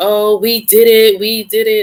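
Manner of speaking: very slow, high, drawn-out, weepy tearful cheer. Retelling how she stood on the chairs at graduation, imitating her crying.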